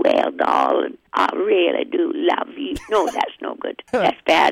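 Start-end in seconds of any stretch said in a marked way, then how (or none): 0.0-2.8 best attempt at a Cajun accent. Answering a request to say it in your best Cajun accent: Cajun accent. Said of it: "and your best Cajun accent".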